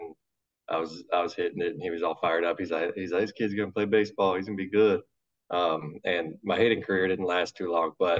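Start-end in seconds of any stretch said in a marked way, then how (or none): none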